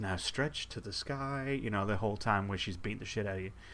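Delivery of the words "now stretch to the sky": serene, calm, slow and unhurried voice. Describing the Wii Fit girl in a fighting game, the speaker imitates her calm voice. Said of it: "in a very calm voice".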